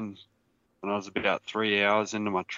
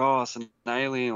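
slow, teasing, mocking drawl; 3 semitones higher than usual. Retelling a brother's reply about the light: imitating a brother's mocking tone. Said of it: "mocking me sort of thing".

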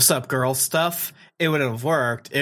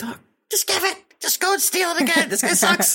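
mock very high, shrill screaming. Retelling a reaction to a scene: imitating screaming at the TV. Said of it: "screaming at my T V".

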